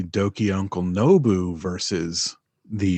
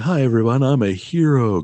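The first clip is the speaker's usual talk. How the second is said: put-on friendly villain voice, higher and louder; 5 semitones higher, 5 dB louder than usual. Describing a bad guy who seems friendly, imitating Homelander. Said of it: "Homelander from The Boys, yeah. Where he's just like".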